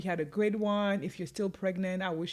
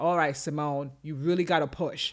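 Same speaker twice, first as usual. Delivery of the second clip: mock-firm, a little stern, lower pitched; 4 semitones lower, 5 dB louder than usual. Quoting the midwife near the end of the birth, retelling a little stern. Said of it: "the midwife got a little stern".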